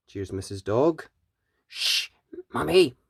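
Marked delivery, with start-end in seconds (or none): 1.7-2.9 soft, hushed, shushing whisper. Reading a story aloud, voicing a child hushing his mother: whispering. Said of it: "whispers Danny".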